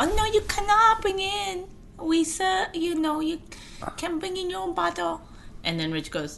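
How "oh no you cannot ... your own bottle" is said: mock Chinese accent, much higher. Retelling what a woman said to them and Rich, in a put-on Chinese accent. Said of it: "It's a Chinese accent".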